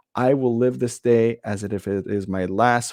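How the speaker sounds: ordinary talk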